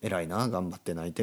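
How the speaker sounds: normal talking voice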